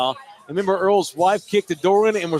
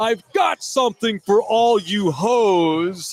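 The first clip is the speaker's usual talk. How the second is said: very slow put-on radio announcer drawl, "hoes" drawn out. Retelling how Chris Duell read a quote: loud Chris Duell voice. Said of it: "that loud Chris voice, that Chris Duell voice".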